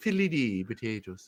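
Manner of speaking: put-on, fake Irish accent. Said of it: "just in an Irish accent".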